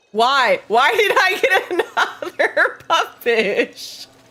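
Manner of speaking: talking through laughter. Fishing in a game with others, laughing while talking. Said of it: "I'm laughing too much".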